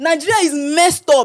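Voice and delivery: loud, high, heated outburst. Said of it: "Mama Justice, calm down".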